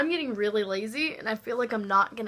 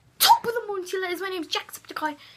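pitched-up, announcing channel-intro voice; 9 semitones higher, 3 dB louder than usual. Doing the Jacksepticeye intro: Jacksepticeye impression. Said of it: "I'm really good at that".

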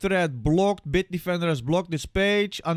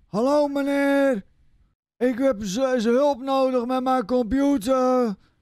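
put-on old man voice; 7 semitones higher than usual. On a phone call asking for computer help, imitating an old man. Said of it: "ik doe even een opa na".

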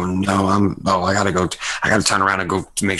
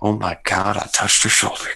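hushed but carrying stage whisper. Describing a character walking off and muttering: stage whisper. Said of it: "stage whisper".

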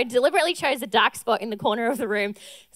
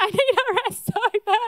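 sobbing and crying, very high pitch; 10 semitones higher than usual. Speaker retells sitting in a dark gym during a workout challenge: imitating sobbing. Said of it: "I'm sobbing and I'm like".

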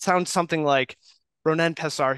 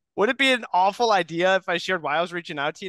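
warm, friendly, lifted voice; 5 semitones higher than usual. Demonstrating a cold call opening, warm and friendly. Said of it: "warm and friendly. That one sounds like this".

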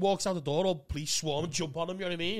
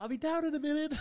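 put-on very high teen-girl voice; 10 semitones higher than usual. Retelling how a boy calls down from upstairs to a visitor; fake teen girl voice. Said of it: "doing a 14-year-old girl's voice".

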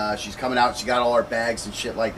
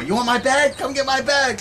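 put-on very high shout, pitch climbing toward the end; 5 dB louder than usual. Retelling what a woman with a knife yelled at a man backing away, retelling a yell. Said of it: "she's yelling at him".

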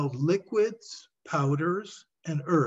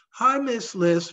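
put-on high, loud, piping boy's voice, sounding expectant; 7 semitones higher, 5 dB louder than usual. A boy greets the woman reading prescriptions, piping expectantly. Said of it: "piped the lad expectantly".

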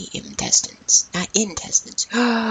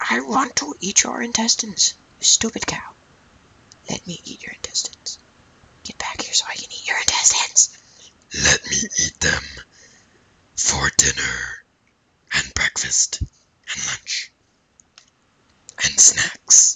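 very low, deep, swooping demon voice. Talking to a cow while playing a game, in a demon voice. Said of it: "That was my demon voice".

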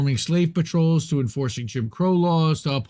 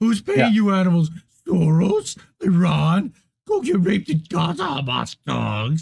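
cartoon dog voice with swoops; 3 semitones higher than usual. Speaker quotes what people said on camera to protesters, in a Scooby-Doo voice. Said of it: "Why did you do the Scooby-Doo voice with that?".

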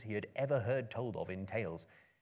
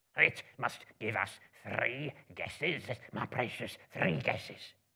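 hissing, hissed-out creature voice. A narrator reads Gollum's reply to Bilbo's riddle in a hissing Gollum voice. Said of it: "Hissed Gollum".

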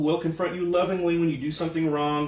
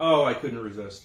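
usual speaking voice

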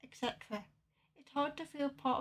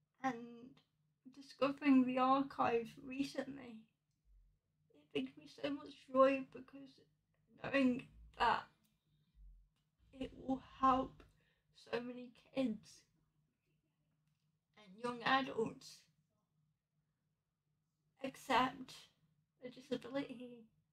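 tearful, quieter; 6 dB quieter than usual. Speaking to listeners about something personal, crying. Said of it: "And boy, I'm crying".

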